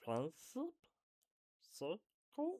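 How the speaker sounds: very high-pitched, squeaky creature voice. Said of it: "That's a voice I've done so many times".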